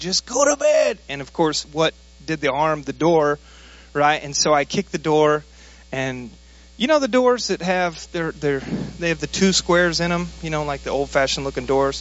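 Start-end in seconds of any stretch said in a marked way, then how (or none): 0.0-1.0 mock, very high, shrill, exasperated shout. Recounting the end of a long, tense day, retelling a yell. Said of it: "I yelled it".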